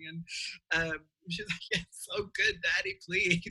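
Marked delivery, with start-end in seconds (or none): 1.7-3.4 acted-out very high crying, swooping, tearful pleading. Retelling how she cried to her dad about a role: imitating someone crying. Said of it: "she would cry to her dad".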